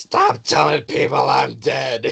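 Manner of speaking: put-on high, creaky, rough old serval voice, drawn out. Voicing an old serval grandfather who shouts from offstage: old serval voice. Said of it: "this old serval voice".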